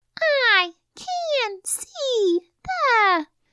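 put-on drawn-out, very high, slow babyish voice. Reading flashed words aloud for students in a baby voice. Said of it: "we're going to read them like this. ... in our baby voice".

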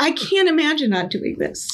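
voice welling with emotion. Answering a question about a career do-over, getting emotional. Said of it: "I'm getting emotional".

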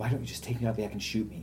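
put-on under-breath muttering. Quoting a woman everyone was teasing, retelling a muttered remark. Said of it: "She said that under her breath".

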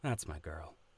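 low, soft, hushed murmur under the breath. Voicing a character watching a replay of a battle: half-whispering under his breath. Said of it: "as he whispers under his breath".

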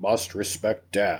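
soft, slow, low-pitched voice. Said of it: "born with the gene that says".

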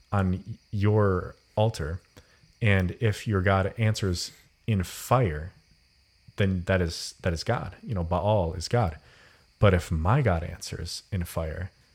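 ordinary talk

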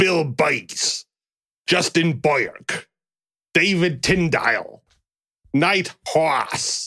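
put-on attempt at a New Jersey accent. Reading out a list of names, the speaker tries a New Jersey accent. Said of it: "I'm gonna try for New Jersey Richard".

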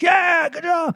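mock shrill yell, way up high. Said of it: "I'm like".

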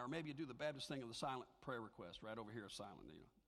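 low, soft sarcastic tone.

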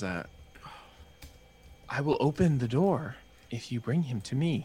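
softened, gentle delivery. Storyteller voicing a female voice that grows softer, in a softer voice. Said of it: "The voice gets softer and she says".

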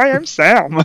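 very high, froggy puppet voice. Acting out a scene from a TV show: Sam's voice. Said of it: "that's how he speaks".

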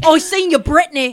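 mock put-on British accent. Imitating a contestant who puts on a fake british accent. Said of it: "who has a fake British accent".

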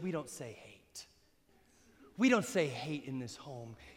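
put-on deep, low, soft, genteel, polite British accent. Speaker quotes their nana correcting them for saying hate, in a polite british accent. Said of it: "in her really polite British accent".

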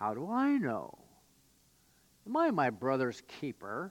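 mock thick, oozing sarcasm with swooping pitch. Acting out Cain's answer when God asks about his brother: Cain dripping with sarcasm, put on. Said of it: "words that were dripping with sarcasm".

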